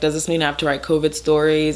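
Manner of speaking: normal talking voice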